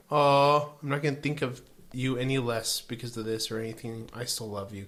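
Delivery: ordinary delivery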